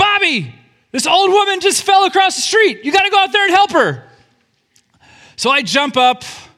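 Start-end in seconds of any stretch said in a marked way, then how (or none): 0.0-4.0 acted-out, very high-pitched yell. Retelling a call from the kitchen to go help: imitating someone yelling. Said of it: "she just yells".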